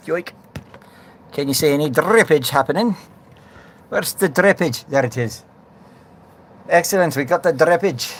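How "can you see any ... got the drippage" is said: weak, bad put-on Scottish accent. Turning on the water and checking for drips, in a Scottish accent. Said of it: "why you be talking in the Scottish accent?".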